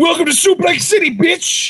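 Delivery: loud, high-pitched yell.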